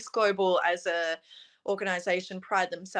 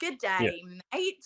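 mock Australian accent attempted by foreign-sounding speaker. Retelling how international girls greeted her: imitating a foreigner's attempt at an australian accent. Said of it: "I can't even not say it Australian".

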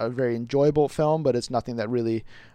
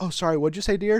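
cocky, smug, pitched-up, dismissive and offhand; 7 semitones higher than usual. Retelling how Tony Stark brushes off a senator: imitating cocky, arrogant Tony Stark. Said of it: "that cocky, like, arrogant guy".

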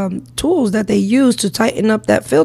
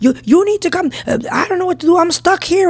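mock screaming man, higher; 8 semitones higher than usual. Retelling a man stuck changing his oil, imitating him screaming. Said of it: "he's like screaming from the top".

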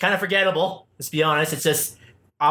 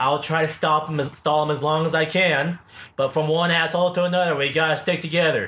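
plain

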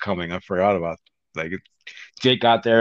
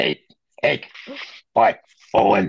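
imitated gruff old-man voice; 2 semitones higher than usual. Showing how he pictured the character sounding, in a gruff old man voice. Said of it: "he sounds like a gruff old man".

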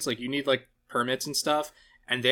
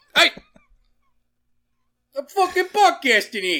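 very high, loud, clumsy bad New York accent; 12 semitones higher, 7 dB louder than usual. Ranting on a podcast, then redoing the line in a bad New York accent. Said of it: "my New York accent was bad".

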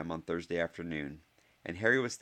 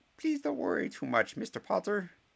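very high, squeaky delivery; 14 semitones higher than usual. Reading a Harry Potter story aloud, voicing Professor Flitwick's squeak. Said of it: "squeaked Professor Flitwick".

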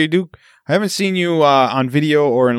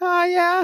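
tiny, very high-pitched, cute little voice; 4 dB quieter than usual. Retelling how a daughter greeted from her bedroom: imitating a little cute voice. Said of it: "a little cute voice that she had".

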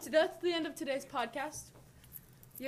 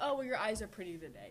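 ordinary delivery

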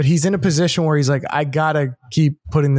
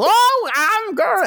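put-on very high-pitched old drunk voice. Retelling an old movie's town meeting scene: imitating an old drunk guy. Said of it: "the old drunk guy goes".

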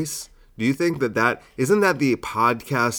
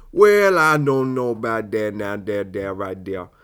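put-on old man voice; 2 semitones lower than usual.

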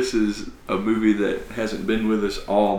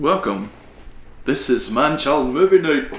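bad fake Scottish accent, pitched high; 5 semitones higher, 3 dB louder than usual. Host opening the show with his co-host, in a horrible scottish accent. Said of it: "That's my horrible Scottish impersonation".

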